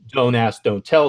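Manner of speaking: ordinary talk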